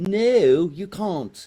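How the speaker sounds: loud, high-pitched fake English accent. Voicing what the people in England will reply, in a Robin Leach-style English accent. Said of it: "That's a phenomenal accent".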